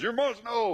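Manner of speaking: put-on preachy know-it-all tone. Acting out a know-it-all believer lecturing a new convert: put-on voice of a know-it-all believer. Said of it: "I'm changing my voice on purpose".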